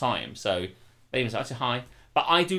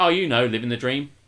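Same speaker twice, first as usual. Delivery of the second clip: put-on sarcastic tone, louder; 5 dB louder than usual. Acting out how a man says a cliché, retelling a sarcastic remark. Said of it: "it's sort of sarcastic".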